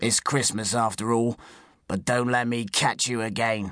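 usual speaking voice

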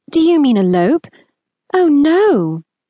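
a touch of shock. Hearing a proposal of Gretna Green, the narrator replies with a touch of shock. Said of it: "I allowed some shock to seep into my voice".

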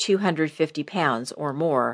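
plain

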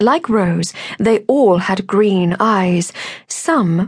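ordinary delivery

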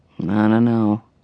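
hesitating. Narrator reading his reply to her, remembering dinner plans with his dad, hesitant. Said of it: "he said hesitantly".

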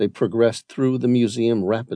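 plain reading voice

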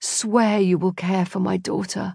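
faint, weak, dying mutter. A man with a stake in his chest pleads about his daughter, weak mutter. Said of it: "muttered Nicholas, his voice weak".

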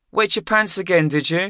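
very high, teasing, giggling taunting tone. Narrator reads a character's teasing remark to James: giggling. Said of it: "Ron giggled".

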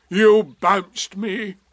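gruff, grumbling, complaining tone. Eeyore answers Tigger, who denies bouncing him: gruff. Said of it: "said Eeyore gruffly".

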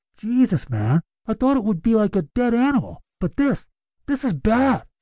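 muffled voice behind hands. A man holding back vomit at a bad smell speaks through cupped hands, muffled. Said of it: "spoke through a muffled voice".

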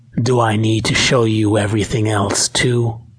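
ordinary delivery, nothing marked

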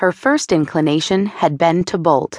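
ordinary delivery, nothing marked

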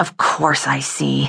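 hissing under the breath. Janie answers Meredith's question, hissed under her breath. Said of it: "Janie hissed under her breath".

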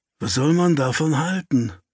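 muttered, grumbling voice. The narrator reacts after the landlady hurries off; grumbled. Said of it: "brummelte ich".

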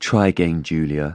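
level, unvaried, flat monotone voice. Retelling what a doctor said, in a monotone voice. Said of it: "he said in his, like, monotone voice".

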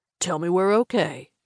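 languid drawling. A narrator reads a driver's dare during a game of chicken: lazy drawl. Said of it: "in a lazy drawl".

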